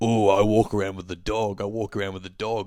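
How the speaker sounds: put-on, mocking, jeering, taunting delivery. Retelling how a guy walking behind them taunted them: imitating someone mocking. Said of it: "he's, like, mocking me".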